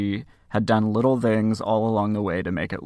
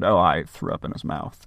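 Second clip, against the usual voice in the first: play-acted breezy, matter-of-fact, very nonchalant offhand tone; 3 semitones lower than usual. Retelling an arrested killer's answer to investigators: imitating a nonchalant tone. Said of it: "she said it very nonchalantly".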